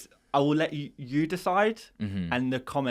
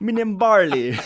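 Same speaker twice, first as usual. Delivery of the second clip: put-on Jamaican accent, much higher, louder; 8 semitones higher, 8 dB louder than usual. Teasing a quiz partner for saying a name in a Jamaican accent. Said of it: "Why do you do it in a Jamaican accent?".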